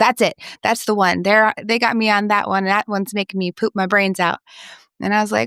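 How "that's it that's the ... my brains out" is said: normal talking voice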